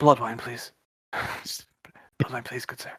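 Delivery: discreet, soft, breathy under-the-breath whisper. In a role-play scene, the speaker's character orders from the dragonborn, whispering. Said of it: "whispering to the uh".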